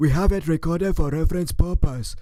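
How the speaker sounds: mocking parroting voice. Repeating the caller's own words back to them: mocking imitation of the caller. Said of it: "Do you hear yourself? You sound like an idiot".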